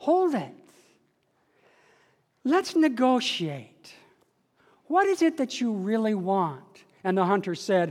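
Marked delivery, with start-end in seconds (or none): 0.0-6.6 calm, gentle, soothing quiet hush. Storyteller voices a bear speaking to a hunter aiming at it, soothing and quiet. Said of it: "the bear spoke to him in a soothing, quiet voice".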